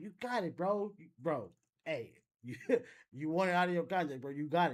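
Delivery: put-on sarcastic voice. Retelling how Gucci acted when robbed: imitating Gucci's sarcastic tone. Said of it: "He was being sarcastic, if you could tell by his demeanor and his, um, his voice".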